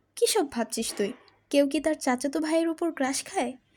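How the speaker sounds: ordinary delivery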